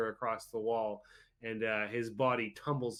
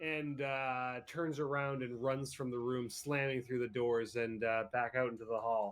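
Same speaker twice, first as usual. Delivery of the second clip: ordinary delivery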